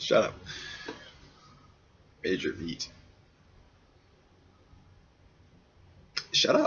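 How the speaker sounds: slow, fighting back laughter, stifling a laugh. Reacting to own phrase while ranting to camera, holding back laughter. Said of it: "I'm trying not to laugh".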